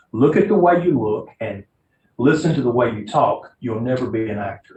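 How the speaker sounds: plain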